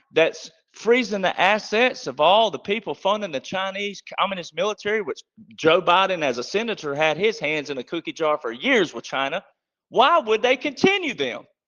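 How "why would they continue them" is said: pointed, pressing, assertive emphasis. Speaker making a point and then explaining the delivery, assertive emphasis. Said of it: "you got to get a little assertive there".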